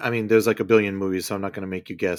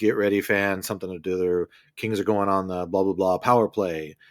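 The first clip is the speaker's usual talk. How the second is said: ordinary talk, nothing marked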